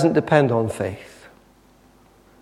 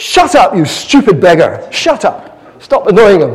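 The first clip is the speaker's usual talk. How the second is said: high, loud, barked shout. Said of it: "They go".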